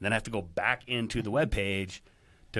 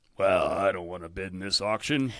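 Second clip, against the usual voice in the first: curmudgeonly, grumpy grumbling voice; 3 semitones lower than usual. Retelling what some auction guests say: imitating a grumpy guest. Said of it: "This is the grumpy voice".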